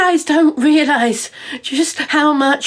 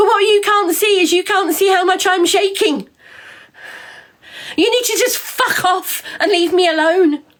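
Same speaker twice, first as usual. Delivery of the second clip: angry shouting, higher pitch; 4 semitones higher than usual. Speaker answering people who made up lies about them, angry shouting. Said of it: "I'm angry and I'm shouting at you".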